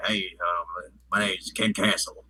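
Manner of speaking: slow, drawn-out southern drawl. Retelling a movie character's line: southern accent imitating Ken Castle. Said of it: "he's got a southern accent".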